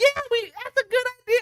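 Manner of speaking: mock, very high, girly voice.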